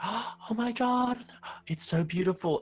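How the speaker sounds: gasping wonder, very high pitched and very slow. Voicing onlookers who watch the moonlit fields: imitating awed onlookers.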